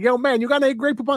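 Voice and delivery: put-on Spanish accent, very high. Retelling a man's line from a Grey Poupon commercial: Spanish accent. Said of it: "he was in his Spanish accent like".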